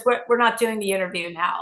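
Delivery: put-on embarrassed, stumbling, fast, sheepish delivery. Retelling what a man said on coming back around the curtain: imitating someone sheepish. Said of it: "like very sheepishly".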